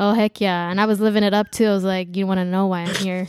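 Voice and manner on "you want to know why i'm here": ordinary delivery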